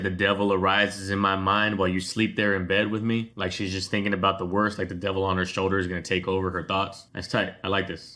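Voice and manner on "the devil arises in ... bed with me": ordinary talk, nothing marked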